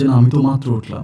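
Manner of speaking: ordinary delivery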